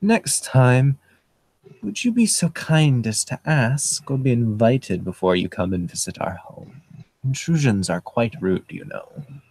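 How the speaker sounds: put-on strange, very polite, barely accented voice. Game narrator voicing a stranger with his hand on Alex's shoulder, strange, very polite voice. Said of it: "in a very polite voice that's strange".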